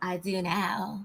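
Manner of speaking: rough, raspy, troll-like voice. Retelling what a castmate said back when challenged: raspy troll voice imitating Courtney. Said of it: "you sound just like that raspy troll".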